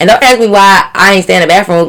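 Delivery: ordinary talk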